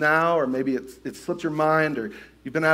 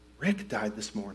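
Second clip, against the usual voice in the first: very quiet, secretive half-whisper, barely audible; 7 semitones lower, 11 dB quieter than usual. Retelling how a colleague leaned in with sad news: imitating someone half-whispering. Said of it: "what I thought that I heard him whisper".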